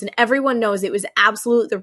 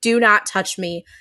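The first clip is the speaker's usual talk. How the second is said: large, booming voice. Speaker retells what Charlie said to Ben, retelling in a big voice. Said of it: "in just like this big voice".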